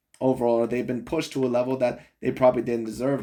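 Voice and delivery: ordinary talk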